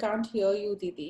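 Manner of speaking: plain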